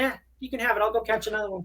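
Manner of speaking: high, polite, gracious, easygoing little dog voice. Voicing the thoughts of a polite pit bull giving up her rat: voicing a polite dog. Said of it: "She's like".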